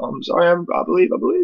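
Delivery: weeping, sobbing, very high and wavering. Retelling weeping after a spirit visit: reenacting own weeping apology. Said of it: "I started weeping".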